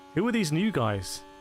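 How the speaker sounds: plain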